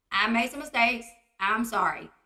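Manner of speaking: ordinary talk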